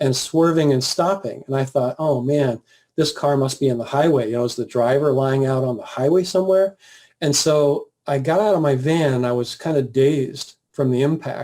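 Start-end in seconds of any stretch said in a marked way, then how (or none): none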